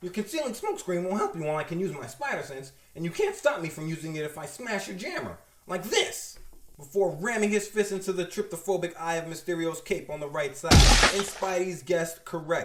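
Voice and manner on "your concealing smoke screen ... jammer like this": ordinary talk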